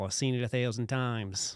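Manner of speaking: fake, put-on Australian accent. Imitating how a political figure would sound: put-on australian accent. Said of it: "I can't really do an Australian as well".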